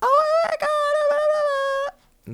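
drawn-out, very high-pitched voice. Retelling how the other speaker reacts, imitating a friend. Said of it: "That's a really good impression of me".

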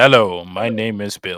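booming, very deep, loud American accent. Asked how people do an American accent, demonstrating it: American accent. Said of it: "How do people do that in American accent?".

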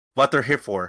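put-on really fast talking. Retelling what a parking attendant said at the gate: imitating someone talking really fast. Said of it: "he spoke, like, really fast".

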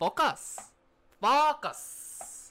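"focus" said as "fuck us". Retelling what he kept saying to everyone: imitating a non-american accent. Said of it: "did not sound like focus in the American accent".

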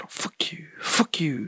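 hushed, slow, drawn-out whispered muttering under the breath. Retelling how a stranger at the self-checkout swore: imitating someone muttering under his breath. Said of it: "talking to me, but, like, under his breath".

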